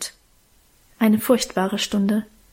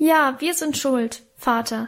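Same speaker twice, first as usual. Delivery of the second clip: usual speaking voice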